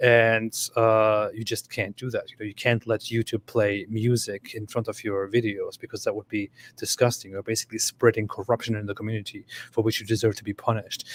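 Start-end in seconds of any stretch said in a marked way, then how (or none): none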